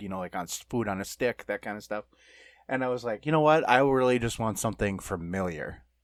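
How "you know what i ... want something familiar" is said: plain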